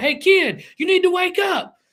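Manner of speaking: very high, shrill, loud screaming. Retelling how a wrestler leaned over a guardrail at a sleeping kid: imitating someone screaming. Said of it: "starts screaming".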